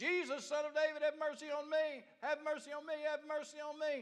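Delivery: high hollering cry. Telling a story, acting out a man who hears someone coming, retelling a holler. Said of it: "he started hollering at him".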